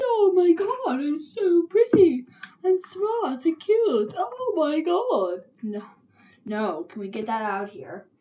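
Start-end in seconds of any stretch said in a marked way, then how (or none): 0.0-5.4 highest-pitched voice possible, shrill, loud, drawn-out. Retelling what a woman said to the players, mocking a very high-pitched voice. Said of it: "the highest pitch of voice ever".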